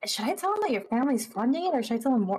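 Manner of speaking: whispered in an acted character voice. Voicing a character leaning toward another character to ask: whispering in character. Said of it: "but whispering".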